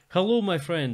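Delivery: put-on Russian accent. Suggesting to a friend how to greet someone in the game, in a Russian voice. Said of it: "do the Russian voice instead".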